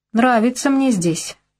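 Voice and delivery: derisive. Narrating a woman answering a killer's question, mocking. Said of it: "насмешливо выдавила я".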